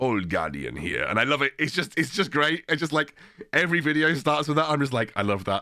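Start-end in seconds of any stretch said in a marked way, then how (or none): 0.0-1.0 low-pitched put-on Finnish accent. Quoting the opening line of a creator's every video, imitating a finnish accent. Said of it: "in his like Finnish accent".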